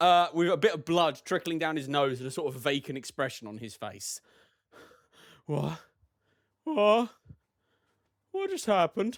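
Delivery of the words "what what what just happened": gasping, breathless, bewildered. Voicing a wagon driver who snaps back after a seizure: gasping for breath.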